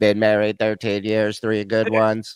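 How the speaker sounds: very low, flat, machine-like monotone, no inflection. Imitating someone's joke delivery: flat robotic delivery, no inflection. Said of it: "like you typed it into a computer program with a voice that says it. Like there's no inflection on anything".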